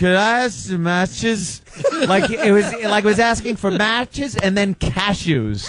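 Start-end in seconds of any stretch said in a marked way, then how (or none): 0.0-1.6 mock drunken, slurred speech. Retelling how someone ordered nachos, imitating slurred drunk speech. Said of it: "He slurred the word nachos so bad that it came out".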